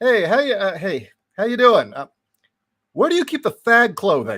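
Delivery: mock voice, as loud as possible. Reenacting the question asked to a confused woman: imitating asking very loudly. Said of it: "loudly as he possibly could".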